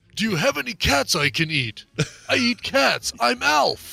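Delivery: raspy salesman voice. Playing the guy sitting beside a little girl's bed: ALF voice. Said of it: "weird game show used car salesman voice".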